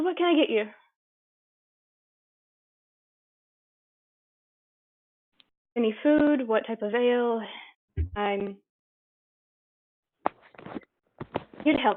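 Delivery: weary, tired, worn-out voice. The game master speaks as a woman serving the party: tired. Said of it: "She sounds tired".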